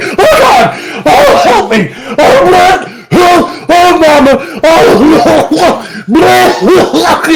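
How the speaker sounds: acted, very high, drawn-out, swooping panicked wails. Retelling a cartoon scene where he nearly drowns: imitating panicked half-drowning cries. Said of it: "And he's like half drowning".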